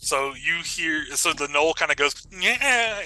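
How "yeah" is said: scared, high, hyena-like little whimper. Voicing a scared gnoll: hyena-like whimper. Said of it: "like a very hyena little".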